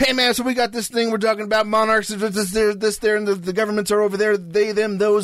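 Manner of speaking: casual dude voice, rambling and tripping over words. Imitating a friend again after a failed try: better Ernie impression. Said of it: "let me do a better Ernie".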